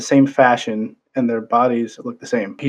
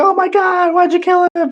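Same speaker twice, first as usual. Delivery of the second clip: acted very high, wailing, drawn-out scream. Recounting a vampire story, the speaker acts out the wife's reaction, imitating a screaming wife. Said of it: "his wife is like screaming".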